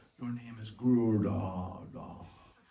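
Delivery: deep, low, grave, intoned voice. Recalling being given a name, in Prabhupada's grave, deep voice. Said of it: "Prabhupada had a very grave, deep voice".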